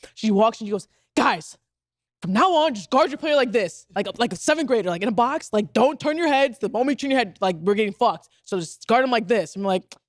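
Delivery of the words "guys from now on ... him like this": fed-up, frustrated delivery. Retelling what Sue told the team at halftime: imitating frustrated Sue. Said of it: "when Sue gets, like, frustrated".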